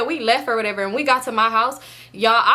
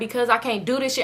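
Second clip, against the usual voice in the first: ordinary talk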